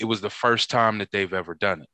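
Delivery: ordinary delivery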